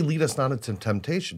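ordinary talk, nothing marked

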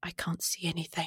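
faint, very quiet, hushed, barely audible voice. Deep in the dark beneath the tree, an unseen voice speaks, very quiet and hushed. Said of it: "you hear a very quiet, hushed voice say".

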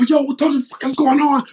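mock yelled, screaming outburst. Retelling a shoot where the director burst in: imitating the director screaming. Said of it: "he's screaming and yelling and cussing".

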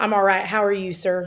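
put-on Arkansas accent. Greeting an interviewer in character: Sarah Huckabee Sanders impression. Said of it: "the Arkansas accent there".

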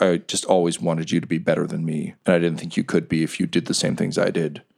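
low character whisper. Game master voicing Riker, who embraces Bryn and apologizes, Riker whispering into ear. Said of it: "he whispers into your ear".

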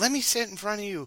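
mock very high, insistent, demanding yell. Retelling a girl at a concert yelling in his ear: imitating someone yelling. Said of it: "yelling in my ear".

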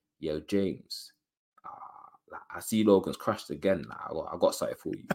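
deep, smooth, coaxing sweet-talking voice. Imitating callers sweet-talking on a voice note: imitating a deep sweet-talking voice. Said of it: "deep voice and that".

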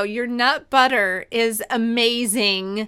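very slow, drawn-out, each word deliberately spaced. Telling the guest their nut butter is amazing, said really slowly. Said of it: "I have to say this really slow".

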